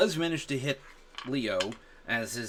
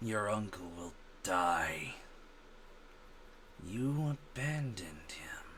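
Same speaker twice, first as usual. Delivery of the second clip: very quiet, hushed, strange alien-like voice; 3 semitones lower, 10 dB quieter than usual. Game master voicing a man whose glassed-over eyes turn toward the player: a voice not his own. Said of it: "in a voice that is not his".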